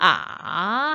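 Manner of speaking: a falls low then rises back, third tone. Teaching children chinese tones, modeling a dipping third tone on a. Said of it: "삼성이요. 그럼 발음은 어떻게 하나? 아, 한다".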